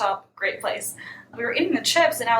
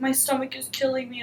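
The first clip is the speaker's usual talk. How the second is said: put-on whiny, small-child voice; 2 semitones higher, 4 dB quieter than usual. Retelling what a guy said back at his place, imitating childlike whining. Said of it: "whining like a little child".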